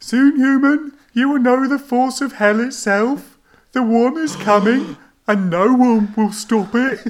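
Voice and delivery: put-on very high, loud, emotional Birmingham accent. Narrating a story, voicing the dying thing's last words, in a Birmingham accent. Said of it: "get more emotion into the Birmingham accent".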